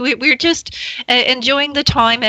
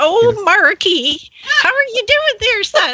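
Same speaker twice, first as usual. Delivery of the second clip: put-on very high, slow old granny voice; 10 semitones higher than usual. Greeting the caller as his grandma after he says she sounds like her: imitating a grandma. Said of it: "you sound a, a lot like my grandma".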